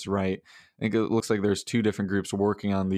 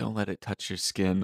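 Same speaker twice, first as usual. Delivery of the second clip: mock whispering; 4 dB quieter than usual. Retelling an ad where a guy gives a necklace: imitating a whisper. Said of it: "he just whispers in her ear".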